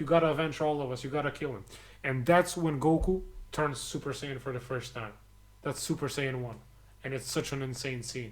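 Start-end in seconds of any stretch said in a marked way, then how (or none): none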